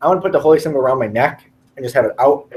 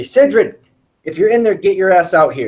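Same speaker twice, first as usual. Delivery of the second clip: loud yelling, calling out; 4 semitones higher than usual. A game character calls for a friend to come out, yelling. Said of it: "So I'm gonna yell".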